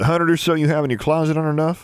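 understated, bone-dry, slightly high delivery. A brother replies to his excited sister at dinner, asking dryly. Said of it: "Maximilian asked dryly".

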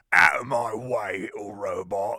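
very loud, booming, big burly full-on Cockney voice. Recounting how someone voiced a big burly guy: full-on Cockney voice. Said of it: "he did go full on Cockney".

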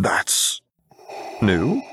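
hoarse, croaked-out, off-kilter voice. A man whose voice won't cooperate finally answers, croaking. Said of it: "he croaked out".

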